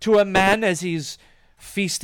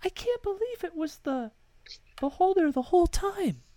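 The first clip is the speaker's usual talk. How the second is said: weak, faint, very high little voice; 11 semitones higher, 7 dB quieter than usual. Voicing the short woman at the bar reacting to the beholder reveal, in a faint voice. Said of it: "you hear with her faint voice".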